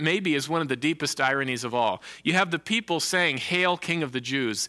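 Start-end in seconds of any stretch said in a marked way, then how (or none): none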